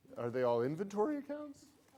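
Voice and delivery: voice lifts at the end, rising tune on accounts. Speaker repeats a listener's question to show rising question intonation. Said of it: "you kind of your voice went up".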